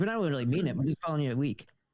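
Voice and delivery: put-on New York accent. Discussing a figure's word choice, a speaker voices him in a new york accent. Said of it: "He said it like a New Yorker would".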